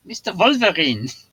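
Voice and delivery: put-on, attempted, very high German accent. The speaker tries out a german accent as announced, attempted german accent. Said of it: "trying to do a, a German accent".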